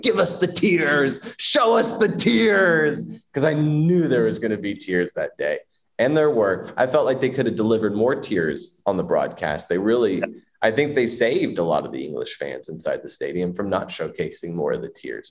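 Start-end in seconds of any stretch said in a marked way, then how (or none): 0.0-3.3 mock very high, very slow, drawn-out screaming. Retelling cheering against england while watching at home: imitating his own screaming at the tv. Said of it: "I kept screaming at the T V".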